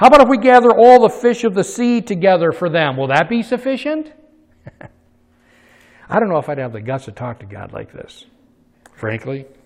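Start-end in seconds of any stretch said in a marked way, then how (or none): 0.0-4.1 very high, loud, mocking sarcastic tone. Retelling how a man spoke to the Lord, retelling sarcastic speech.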